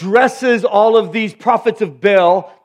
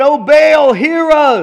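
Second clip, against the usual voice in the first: very slow, drawn-out, high-pitched shouting; 6 semitones higher, 4 dB louder than usual. Narrating a Bible story as the worshippers dance around the altar, shouting. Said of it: "They began to shout".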